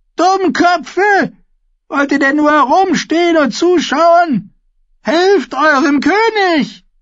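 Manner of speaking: very high, screeching, shrieking, scolding voice. The grandmother shouts at the onlookers to help the choking king: shrieking. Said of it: "kreischte die Dornenkönigin".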